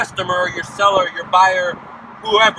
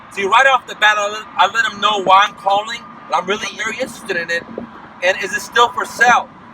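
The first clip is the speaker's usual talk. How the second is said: plain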